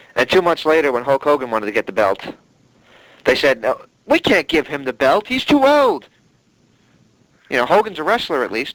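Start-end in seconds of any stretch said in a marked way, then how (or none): 3.7-6.1 put-on English accent, slow, high, swooping, drawn out. Quoting what the bookers said about Hulk Hogan, in an English accent impression. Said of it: "you just did an English impression".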